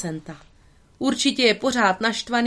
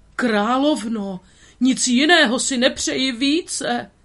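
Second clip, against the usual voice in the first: shaking, quavering, trembling voice; 3 semitones higher than usual. Gargona answers the queen in a trembling voice. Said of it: "řekla Gargona třesoucím se hlasem".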